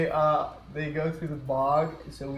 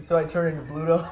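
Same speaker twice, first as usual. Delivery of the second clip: ordinary talk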